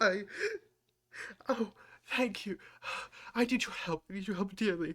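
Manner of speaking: high, tearful pleading with crying, hiccuping sobs. In a role-play, a tearful woman asks someone for help: crying and hiccuping. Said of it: "crying and hiccuping".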